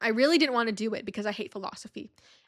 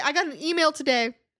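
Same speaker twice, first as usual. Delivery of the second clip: strange, very high, gurgling, bubbly throat voice, crazy-sounding; 5 semitones higher, 4 dB louder than usual. Speaker starts telling about an email on an exam: odd bubbly throat voice. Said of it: "What's this voice?".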